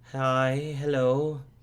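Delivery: very shaky, trembling, quavering, high-pitched voice. In a role-play, a little sister greets two people when introduced; very shaky voice. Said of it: "she says in a very shaky voice".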